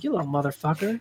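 spot-on put-on cartoon dog voice. Imitating the dog from a video game mocking the player: imitating the Duck Hunt dog. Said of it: "you did that way too perfect".

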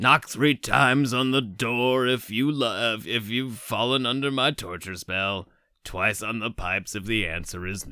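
sinister villain voice. Riffing on a movie scene, voicing a captor in Jigsaw voice. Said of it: "Why are we giving Cary Elwes the Jigsaw voice?".

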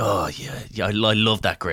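acted-out whisper. Acting out what the man she is dating whispers in her ear: retelling a whisper. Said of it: "Just whispering in".

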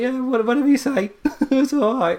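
very high, agreeable, polite British man's voice. Describing Britain going along with America, in a polite British man voice. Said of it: "the polite British man's like".

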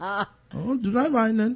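put-on Indian accent. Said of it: "using a false name and an Indian accent".

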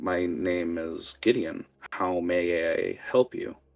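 very slow, deliberate, every word drawn out. Voicing the bandaged man greeting a player: voicing Gideon. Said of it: "he continues to talk to you and goes".

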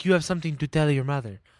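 put-on guru voice. Retelling a scene, the speaker quotes the guru talking to the son: Guru Pitka accent. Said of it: "That was a great accent, by the way".

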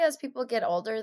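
ordinary delivery

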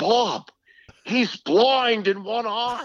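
put-on very high-pitched voice with a thick Boston accent. Retelling what Ken said to Bob Ferry, do Ken Beatrice's thick Boston accent. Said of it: "he had this thick Boston accent".

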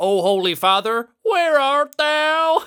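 put-on Texas accent, very high voice. Riffing on a bit for the end of every episode, in a Texan Jesus voice. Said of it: "Texan Jesus".

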